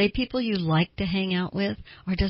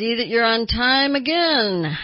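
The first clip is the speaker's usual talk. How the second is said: loud, sardonic, sarcastic tone; 4 semitones higher, 5 dB louder than usual. Playing the sarcastic person greeting someone late for a meeting, sardonic tone. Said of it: "you've got that sardonic tone in your voice".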